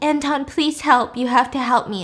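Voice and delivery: mock crying, tearful and pleading. Retelling a story, speaker acts out an injured girl pleading for help, imitating someone crying. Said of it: "And she's crying".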